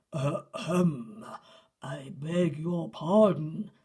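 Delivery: loud, deep, gruff growl, very slow and drawn out. Narrator voicing Percy startling sleeping animals from behind a bench, deep growly voice. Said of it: "said Percy in a deep, growly voice".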